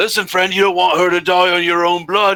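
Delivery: loud, high threatening shout. Voicing a bandit holding a hostage at knifepoint: bandit shouting a threat. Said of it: "he shouts out".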